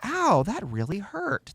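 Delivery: dramatized, exaggerated hurt in the voice. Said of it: "kinda dramatize it".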